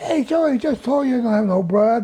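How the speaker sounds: squeaked out, high-pitched. Retelling what a young squad member said to Joey, imitating Squeaky's squeaky voice. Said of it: "a squeaky voice from one of my squad members".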